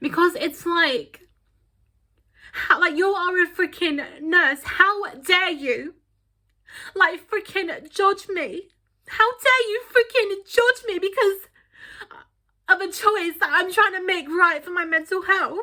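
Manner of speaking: high-pitched emotional outburst, feelings audibly rising. Recounting what a nurse said to her: emotional. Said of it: "I'm getting emotional now talking about it".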